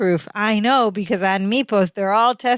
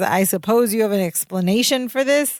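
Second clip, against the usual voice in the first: ordinary delivery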